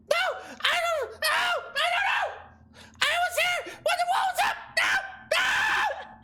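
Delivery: very high, frantic, terrified panic. Voicing a captured kobold who is threatened with a cat: kobold freaking out in panic. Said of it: "he's freaking the fuck out about fuzzy animals".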